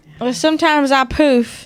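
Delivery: put-on southern belle voice. Retelling something overheard, in a Southern belle Texas accent. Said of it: "Very Southern Belle".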